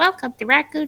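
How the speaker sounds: public address announcer voice over small speaker, high. Voice actor recalling how they voiced the pa system, little speaker pa voice. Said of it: "it sounded like a little speaker voice going like".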